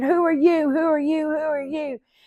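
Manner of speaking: frantic, panicked, high shrieking, over and over. Retelling panicking at a hissing snake-like thing, in a reenacted scream. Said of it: "And I start screaming".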